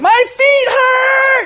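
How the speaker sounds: put-on shrill little-kid scream, very high, hurt, drawn out. Parent retelling hearing the kid after going potty, imitating Cole screaming. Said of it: "I hear him start like screaming".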